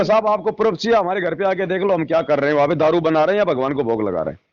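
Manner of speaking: normal talking voice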